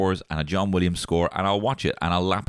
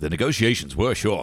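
put-on plucky, wisecracking voice. Quoting a wisecracking Star Wars line: imitating Ewan McGregor's wisecracking Obi-Wan. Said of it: "He's all like".

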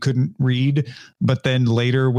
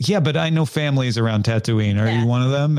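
ordinary delivery

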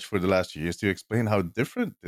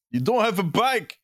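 yelling very high, high-pitched yell; 11 semitones higher than usual. Retelling yelling at a teammate during a game: retelling yelling at someone. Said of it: "I keep yelling at him".

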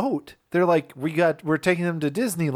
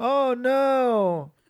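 put-on disappointed voice, pitched up, last word drawn out; 7 semitones higher than usual. Quoting the first mate's reaction in a movie: imitating a disappointed movie character. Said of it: "He sounds more, like, disappointed".

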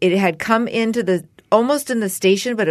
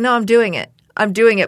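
put-on voice close to crying; 3 semitones higher than usual. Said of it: "but close to crying".

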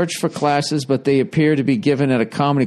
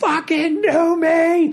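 put-on drunken screaming, higher pitch. Retelling how drunk fans screamed at a sportscaster: imitating drunken screaming. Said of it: "we'd all just start screaming".

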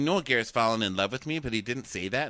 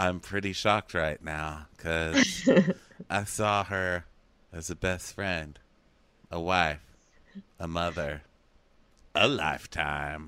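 put-on sad voice, very slow, words dragged out; 6 semitones lower than usual. Speaker imitates someone who can't act but has to be sad: mock sad, really slow. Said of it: "he just starts talking really slowly and closes his eyes".

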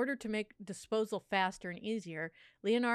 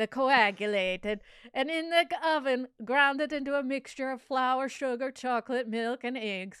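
loud, bad Italian accent drifting into Eastern European; 4 semitones higher, 6 dB louder than usual. Reading a passage aloud for listeners, in an Italian accent that sounds Eastern European. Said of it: "you sound like an Italian that was raised in like Eastern Europe".

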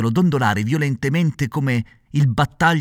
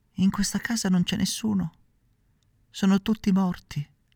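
tiny, faint, high, ghostly little voice; 7 semitones higher, 6 dB quieter than usual. Narrator reads a girl at the window answering Pinocchio; tiny voice from another world. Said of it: "con una vocina che pareva venisse dall'altro mondo".

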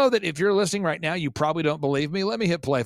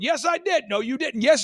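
put-on yelling, higher; 8 semitones higher than usual. Retelling an argument between two men, imitating someone yelling. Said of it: "They're just yelling".

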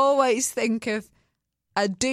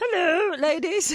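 put-on frog voice, pitched higher; 7 semitones higher than usual. Imitating the other speaker's "Hello" intro: imitating Zach's frog voice. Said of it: "the frog thing".

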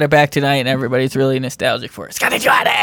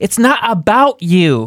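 mock, very drawn-out, slow, high, irritated, pointed; 7 semitones higher than usual. Retelling what Hannah says every time she gets mad: imitating Hannah getting mad. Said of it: "she gets mad, she's like".

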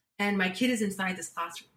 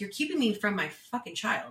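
acted, reenacted upset tone. Told by a woman to go sign her out first, retelling being upset. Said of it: "I was like Kind of upset now".

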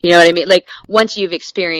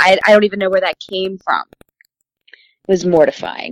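plain

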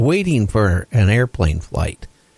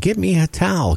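acted-out scream, much higher pitch; 8 semitones higher than usual. Retelling a woman stuck in the water shouting to a man, retelling a scream. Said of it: "starts screaming".

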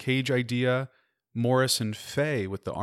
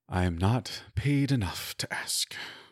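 muttering under breath; 3 semitones lower than usual. A security guard watches the party pass to the elevators; muttering under breath. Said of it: "you hear him mutter under his breath".

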